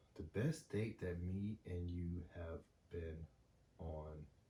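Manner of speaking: very slow, deliberate delivery. Answering the other person's question about their best date together, saying it really slowly. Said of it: "I'm saying this really slow".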